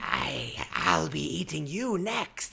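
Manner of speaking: wicked, slow, swooping, creaky witch voice. Voicing a wicked tree witch who turns on a player: wicked tree witch voice. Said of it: "this wicked tree witch turns to you and says".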